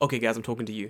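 normal talking voice

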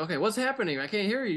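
acted, rushed, panicky freaking-out radio chatter. Describing radio calls, imitating the guy who's freaking out. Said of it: "the guy who's freaking out".

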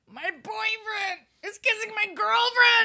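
mock angry, mad voice. Acting out Archie watching his friends kiss: imitating Archie being mad. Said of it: "he's probably so mad".

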